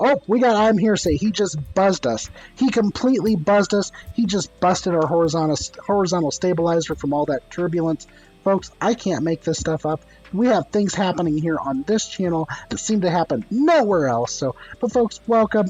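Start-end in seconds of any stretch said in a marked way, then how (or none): none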